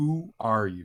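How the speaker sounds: looming, judging voice calling out. Narrating a game scene, voice the presence calling out again: booming voice. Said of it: "the booming voice calls out again".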